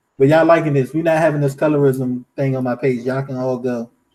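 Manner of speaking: ordinary talk, nothing marked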